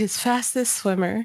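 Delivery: imitated mumble under the breath. Retelling what the character muttered about Hephaestus: imitating a muttered aside. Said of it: "mumble under her breath".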